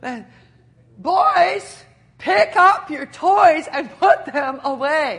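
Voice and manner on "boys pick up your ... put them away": firm, loud, very slow delivery. Retelling trying again to get the kids to pick up toys, the speaker reenacts a louder command. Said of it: "I guess I'm not speaking loud enough".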